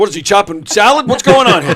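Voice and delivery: extremely loud, high-pitched shout. Retelling what an actor called out at a party: imitating someone yelling. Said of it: "one of my actors yells out".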